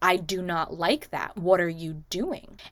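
put-on suddenly clear, sober voice. Retelling a movie scene where the character drops the drunk act: imitating a suddenly clear, sober voice. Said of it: "she clears her voice and she goes".

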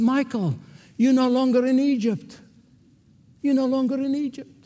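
mock astonished tone. Retelling a friend's reply in a milk bar: imitating a surprised friend. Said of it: "he looked at me with utter surprise and he said".

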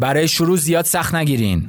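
angry, sharp tone. Tone exercise saying one sentence in different tones, first an angry tone. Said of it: "لحن عصبانی".

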